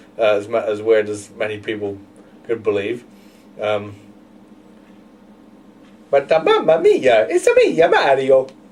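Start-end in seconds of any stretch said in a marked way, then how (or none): 3.6-8.5 put-on happy cartoon voice, much higher, slower. Offering to give Mario a voice, the speaker shows he can: Mario voice. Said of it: "because I can do his voice".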